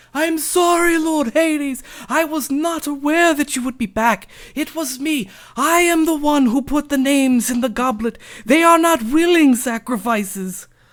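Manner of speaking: very high, loud, howling, blubbering crying. Voicing a character who falls to the ground before Lord Hades: bawling while pleading. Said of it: "he starts bawling".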